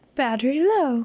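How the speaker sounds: calm, feminine put-on gadget voice. Describing a device's low-battery warning, calm feminine device voice. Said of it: "calm, feminine voice, much like that".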